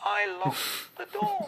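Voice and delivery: very high, feeble, weedy small voice. Retelling how he answered his angry dad, in a weedy little voice. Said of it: "In a weedy little voice".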